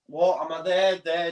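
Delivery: ordinary delivery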